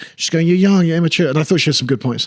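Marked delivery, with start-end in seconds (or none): 0.5-1.3 mock brash mouthy tone, higher pitch. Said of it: "she was giving it the big uns to everyone".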